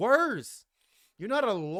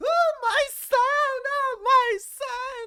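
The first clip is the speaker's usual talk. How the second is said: mock very high, loud, wailing crying mother voice; 7 dB louder than usual. Saying who should really be crying, imitating a crying mother. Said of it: "Those tears are reserved for someone else".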